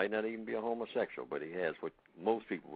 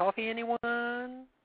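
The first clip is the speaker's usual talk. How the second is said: the word coffee pulled long, very high pitch; 8 dB louder than usual. Giving an example of how a man talks, imitating a man stretching out 'coffee'. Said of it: "a male who talks like that".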